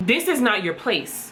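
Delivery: ordinary talk, nothing marked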